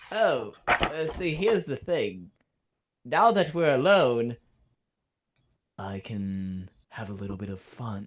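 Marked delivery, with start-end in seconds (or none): 5.8-8.1 shifted into a low, lowered speaking tone. Voicing a character's lines during a tabletop game, in a lower tone. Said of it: "talking in a lower tone".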